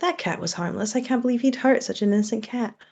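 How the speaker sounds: hushed, secretive half-whisper, meant for one listener. Player's character telekinetically speaks to someone in the crowd, half-whispering. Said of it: "telekinetically whisper to someone in the crowd".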